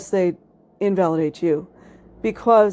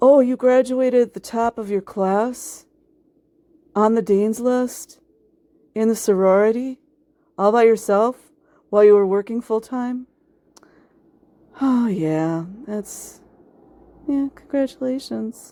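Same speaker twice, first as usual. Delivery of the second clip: put-on bored, dismissive tone, much higher pitch; 3 semitones higher than usual. Acting out how unimpressed people react to your achievements: mock-bored, unimpressed. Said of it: "they're just not impressed. It's just so boring".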